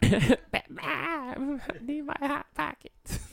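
very high, drawn-out cartoon-kid voice, every word stretched. Joking on after being called Cartman, begging mom: Cartman voice. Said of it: "Okay, Cartman".

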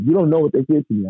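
high-pitched mock yelling, close to crying. Retelling yelling at someone who told them to calm down, retelling own yell. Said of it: "I'm yelling".

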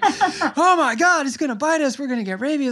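put-on panicked screaming. Retelling panicking when a bat flew around the villa closet, retelling panicked screaming. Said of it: "I'm just screaming".

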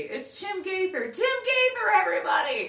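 very high, loud hype-man announcer voice. Retelling how the guest is introduced: imitating own announcer introduction. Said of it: "I say".

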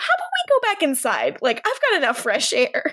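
play-acted sudden alarmed panic, high and swooping. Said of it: "suddenly very panicked, and is like".

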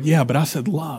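soft whisper. Retelling Jesus's reply to his complaint, whispering as Jesus. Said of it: "he's like whispering".

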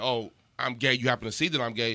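normal talking voice

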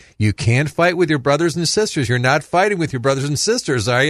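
put-on playful, teasing scolding, having fun. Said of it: "I yell at and have fun with them".

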